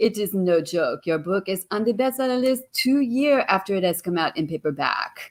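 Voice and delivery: put-on French accent. Speaker quoting what their agent said to them; imitating a french accent. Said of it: "who has that beautiful French accent".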